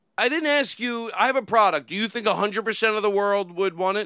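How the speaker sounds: high-pitched, loud, indignant tone.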